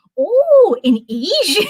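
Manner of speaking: very high outburst. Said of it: "my dad's voice is just in my head".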